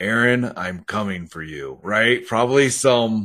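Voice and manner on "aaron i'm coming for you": imitated deep voice. Retelling a voice heard at night near the bathroom: imitating a deep voice. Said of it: "a really deep voice".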